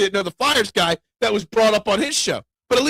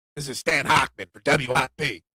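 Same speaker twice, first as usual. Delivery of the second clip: raspy, rasping radio announcer voice; 8 semitones lower, 4 dB quieter than usual. Recalling early morning radio in a van: raspy Stan Hochman voice. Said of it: "Raspy voice".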